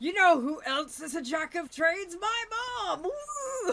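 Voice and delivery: shrill, very high, very loud cartoon jock voice. Dissing something, the speaker switches into a Muscle Man voice. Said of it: "Muscle Man voice activate".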